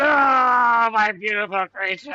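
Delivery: very high, loud wail with long drawn ah. Game narrator voicing Altronus as his creature hits the concrete, Altronus wailing. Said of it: "as he's like wailing".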